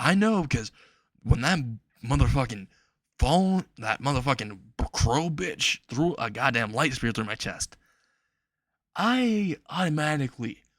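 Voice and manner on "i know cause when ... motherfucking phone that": usual speaking voice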